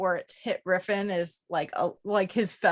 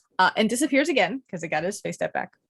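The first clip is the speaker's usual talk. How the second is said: usual speaking voice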